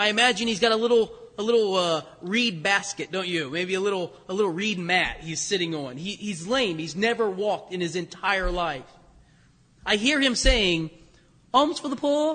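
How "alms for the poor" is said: put-on English accent, higher. Voicing an imagined lame man sitting at the temple, in an english accent. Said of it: "he says it in an English accent".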